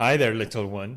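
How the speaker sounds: speaking from the diaphragm. Showing how to greet girls so they notice, speaking from the diaphragm. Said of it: "speak really from your diaphragm".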